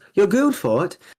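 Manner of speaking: put-on Australian accent. Retelling a live clip where someone reacted to a yell, imitating Ayla's Australian accent. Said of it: "in their Australian accent".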